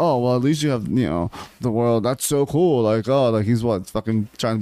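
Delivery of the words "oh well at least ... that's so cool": mock sarcastic tone disguised as niceness. Imitating a man who pretends to be nice: imitating sarcasm disguised as niceness. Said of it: "being sarcastic in his head, basically".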